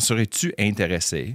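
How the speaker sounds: ordinary delivery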